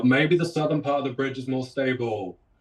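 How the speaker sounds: line called out but kept contained and restrained. Playing a character who yells a warning to the group: yelling in character. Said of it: "I just yell".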